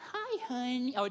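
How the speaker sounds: silly, very high, sweet, doting voice. Recalling greeting their young daughter, retelling a silly-sounding greeting. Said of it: "I would just sound like an idiot when I would say it".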